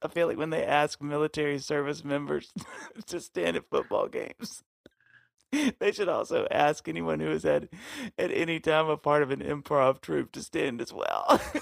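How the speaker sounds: can't stop laughing while speaking. Reading aloud someone's funny written words, laughing while reading. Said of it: "I can't stop laughing".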